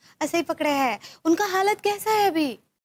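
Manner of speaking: very high, sweet, fussy put-on voice.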